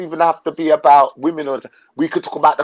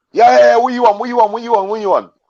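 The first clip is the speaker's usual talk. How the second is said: put-on London accent, pitched up; 6 semitones higher than usual. Retelling a friend's phone call, imitating him in a London accent. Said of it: "I'm just using my London accent".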